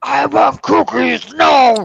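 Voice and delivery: rough bellow from the throat. Asked what Cookie Monster says, speaker answers in a Cookie Monster voice. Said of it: "and me through throat".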